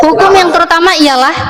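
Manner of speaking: ordinary talk, nothing marked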